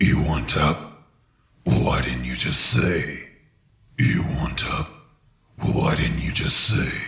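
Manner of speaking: low, deep, rough gravelly rumbling voice. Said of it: "these type of low gravelly voices".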